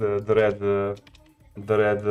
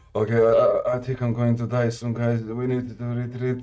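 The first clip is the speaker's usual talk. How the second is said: acted calm, flat, unexcited deadpan monotone. Imitating a friend calmly calling a retreat: imitating Dennis with zero adrenaline. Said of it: "a zero adrenaline in his voice".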